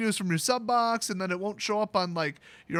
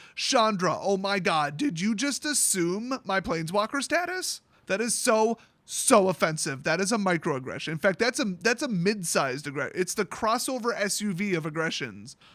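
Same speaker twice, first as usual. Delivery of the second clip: ordinary talk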